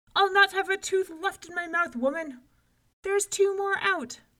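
very high, very loud hollering. Coccolin chomps into loaf after loaf and calls out to the woman, hollering even louder. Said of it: "Coccolin hollered even louder".

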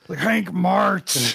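rough, creaky, rasping barked delivery. Retelling a father screaming at his son Hank, in a Brock voice. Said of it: "He says it in a Brock voice".

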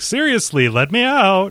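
very high, drawn-out, desperate pleading, acted out. Retelling a character walled in who keeps begging: imitating someone pleading.

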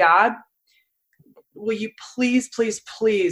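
mock imploring, begging, pleading voice. Retelling a prayer from a time of serious illness: reenacting a begging prayer. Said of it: "I'd like begging".

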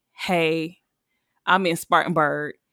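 put-on trembling, shaky voice. Retelling a late-night call asking for a ride, imitating own trembling voice. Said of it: "my voice is trembling and everything".

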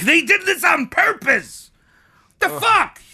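high, loud, outraged ranting shout.

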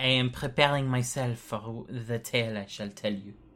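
fake, put-on French accent. Podcast host, asked about the accent, answers in a put-on french accent. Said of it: "what's with the accent?".

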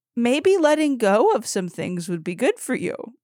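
light, playful, half-kidding joking tone. Retelling what her husband said across the table, imitating him joking. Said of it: "he said it jokingly".

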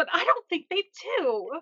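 put-on earnest, very upset, high, swooping girl voice. Retelling girls answering a question, acting out another girl who is very upset. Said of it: "another girl very upset is like".

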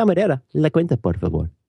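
Castilian Spanish accent. Asked to say a spanish practice phrase, in a castilian spanish accent. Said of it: "I would like to hear it with a Castilian accent".

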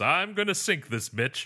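very high character voice. Retelling a joke from a mocking trailer review: imitating Crow T. Robot. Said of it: "Crow T Robot goes".

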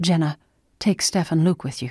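ordinary delivery

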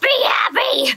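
very high, shrill screamed yell. Planning to cheer up a sad Cody by yelling as Screamers. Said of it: "I'm just gonna yell at him as Screamers".

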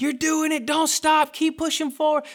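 very high, crazed screaming cheer, acted out. Retelling cheering his son up the driveway: retelling own screaming. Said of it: "screaming at him like a crazy man in the street".

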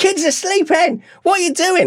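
very high, loud screaming. Man retelling his wife screaming at him, imitating someone screaming. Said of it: "my wife's screaming at me".

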